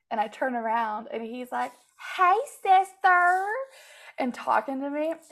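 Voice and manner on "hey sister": very loud, high, flamboyant hail. Retelling what a guy at a bar said, imitating a flamboyant man.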